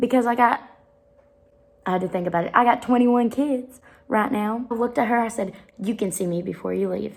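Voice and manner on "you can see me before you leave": put-on motherly voice. Retelling what she told a girl in class, in her mom voice. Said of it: "but I got a mom voice".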